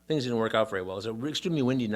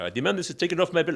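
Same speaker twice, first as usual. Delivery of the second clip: put-on irate European accent, higher and louder; 6 semitones higher, 5 dB louder than usual. Retelling how an irate customer demanded a charge be removed: imitating an irate european accent. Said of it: "European accent".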